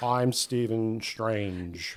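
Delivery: poorly faked American accent. Two people mock an actor's American accent; Benedict Cumberbatch's bad American accent. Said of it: "it's not the best American accent".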